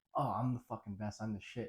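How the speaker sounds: ordinary talk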